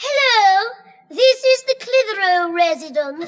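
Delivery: put-on, refined, posh telephone voice. Mocking a sister's la-di-da telephone voice: imitating a la-di-da telephone voice. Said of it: "she gets me down with a la-di-da telephone voice".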